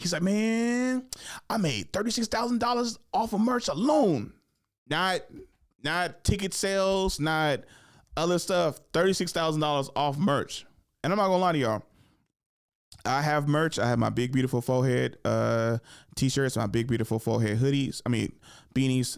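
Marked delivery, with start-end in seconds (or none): 0.2-10.7 "man" pitched very high and drawn out. Retelling a comic's advice about selling merch: John Witherspoon impression. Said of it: "this is how he talks".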